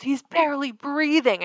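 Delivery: high scream, crying and yelling at once. Retelling a dog owner's reaction to his sedated dog, imitating someone sobbing and screaming. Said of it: "he's like sobbing and screaming at me".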